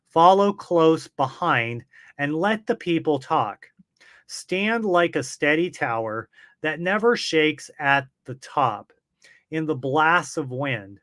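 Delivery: ordinary delivery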